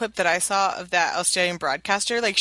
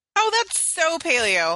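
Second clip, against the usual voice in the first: dripping sarcasm, high-pitched and drawn out; 9 semitones higher than usual. Reacting to canola oil in a low carb diet: sarcastic. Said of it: "it's sarcasm".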